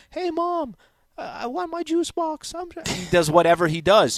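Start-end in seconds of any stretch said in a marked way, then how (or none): 0.1-2.8 put-on very high-pitched, childish little-kid voice. Retelling how Messi gets mocked as a kid: Messi as a little kid voice. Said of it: "a voice impersonation of him being".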